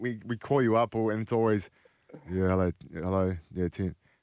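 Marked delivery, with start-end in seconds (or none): 2.3-3.9 flat, listless, unenthusiastic, energy-free voice. Retelling how the guest usually answers calls: imitating an unenthusiastic greeting. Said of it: "Usually I'll get".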